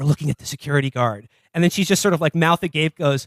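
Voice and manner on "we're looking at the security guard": half-voiced, half-whispered, hushed stage whisper. Retelling a film scene where an agent speaks to a reporter: imitating a half-whisper. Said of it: "John Hamm whispers to her".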